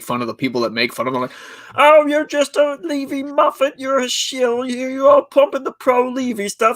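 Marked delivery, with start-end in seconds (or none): 1.7-6.7 very high, squeaky, silly puppet voice. Imitating a man making fun of the people who make fun of him, in a Muppet voice. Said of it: "uses that Muppet voice impression".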